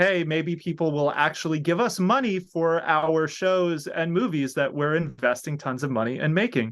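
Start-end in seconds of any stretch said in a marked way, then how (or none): none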